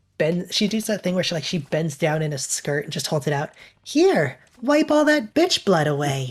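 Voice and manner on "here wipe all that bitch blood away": slow, pleasant, nice lady voice. Retelling what the tissue lady says: imitating the tissue lady's nice voice. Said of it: "saying it in such a nice voice".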